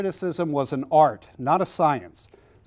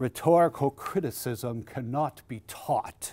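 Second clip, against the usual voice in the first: grandly pompous, hushed pronouncement; 2 semitones lower, 6 dB quieter than usual. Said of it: "in a real pompous sort of fashion".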